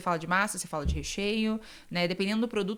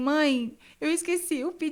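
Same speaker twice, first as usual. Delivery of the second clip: desperate sob, high, drawn out, breaking off; 7 semitones higher than usual. Retelling confessing a forgotten order to mother: imitating own past desperate crying. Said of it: "eu me ajoelhei e eu comecei a chorar".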